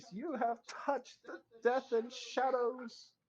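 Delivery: put-on shrill, very high, loud childlike voice. Game master voicing a voice the players hear, in a childlike voice. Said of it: "you hear the childlike voice".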